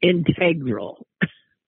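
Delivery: slow integral, stress on second syllable TEG.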